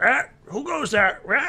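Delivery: very high, crackling voice. A game master voices a figure behind a back door as players approach, crackly voice. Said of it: "this really like crackly voice says".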